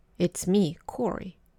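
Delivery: plain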